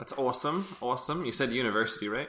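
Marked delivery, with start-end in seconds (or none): 0.0-1.2 weird, almost Scottish accent on "awesome", pitched up. Reacting to another speaker's news, saying awesome in a weird accent. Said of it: "you said "awesome" in the weirdest way".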